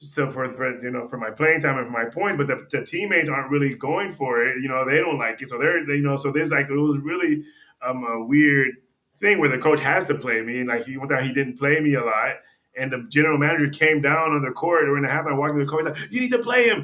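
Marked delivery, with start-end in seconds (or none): 16.1-16.8 high-pitched, loud yelling. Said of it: "you know, yelling at him".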